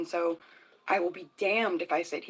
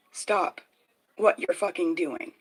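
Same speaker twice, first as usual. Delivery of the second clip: put-on scream, louder; 4 dB louder than usual. Retelling words screamed at a loud neighbor: retelling own screaming. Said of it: "heard me scream at this person".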